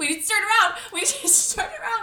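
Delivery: high, fast, laughing, rattled-off panicked freaking out.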